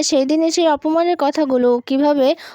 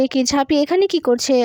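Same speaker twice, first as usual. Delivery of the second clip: ordinary delivery, nothing marked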